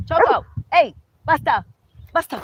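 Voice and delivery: high, very loud yell. Breaking off mid-explanation, the speaker suddenly yells to stop someone: yelling. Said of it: "Sorry, I didn't mean to yell".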